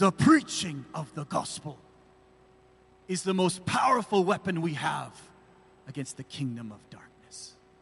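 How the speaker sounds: put-on German accent.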